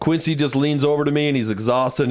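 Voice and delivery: ordinary talk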